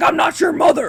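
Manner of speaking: shrill, loud screaming at full force. Telling a story, the speaker repeats what a man yelled at departing boys, imitating someone screaming. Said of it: "he starts screaming at the top of his lungs".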